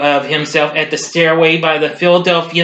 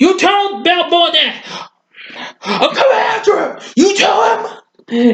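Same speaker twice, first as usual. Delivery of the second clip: put-on tough, taunting boxer voice, higher pitched; 13 semitones higher than usual. Retelling a boxer taunting an old man in the audience: Mister T impression. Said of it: "I can't quite do Mister T that well".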